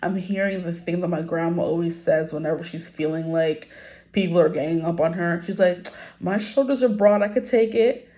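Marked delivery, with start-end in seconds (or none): 6.2-7.9 put-on Trini accent. Quoting Grandma's usual saying, imitating her little Trini accent. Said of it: "in her little Trini accent".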